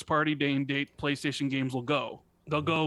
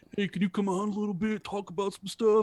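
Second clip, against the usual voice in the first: high, teasing, mocking put-on voice; 5 semitones higher than usual. Retelling how Kyle asked them to come on and talk, the speaker does a mocking imitation of Kyle. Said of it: "Why I gotta have that voice when I ask you?".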